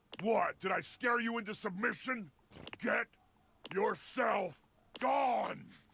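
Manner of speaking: beastly, monstrous voice, pitched high. In a scene, Freddy speaks to the listener, sounding like a monster. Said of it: "He looks and sounds like the monster".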